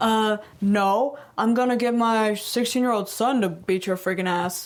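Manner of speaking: flustered, scrambling, backpedaling delivery. Retelling a man's flustered comeback in a confrontation: imitating a scrambling threat. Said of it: "scramble and be like".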